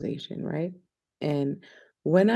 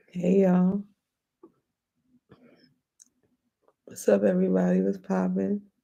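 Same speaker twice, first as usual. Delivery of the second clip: slightly scratchy, raspy voice. Host greeting everyone at the start of Justified Talks, slightly scratchy voice. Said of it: "My voice is a little scratchy".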